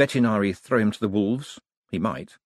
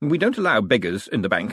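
plain

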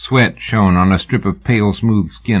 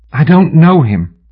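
forceful, raised, high-pitched insistent voice; 7 semitones higher, 5 dB louder than usual. Sybil answers the Texian's sharp question about Houston, insisting. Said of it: "she insisted".

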